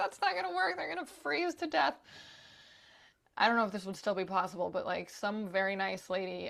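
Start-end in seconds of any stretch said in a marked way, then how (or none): 0.0-1.9 put-on very high, tearful, crying, upset voice. Retelling the airport saying the guinea pigs go in cargo: imitating own crying. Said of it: "start crying at the airport".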